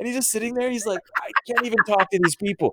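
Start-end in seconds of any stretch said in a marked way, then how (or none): 1.2-2.7 put-on flustered voice, higher pitch. Retelling a scene at a school meeting, imitating flustered Daniel LaRusso. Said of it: "He's so flustered".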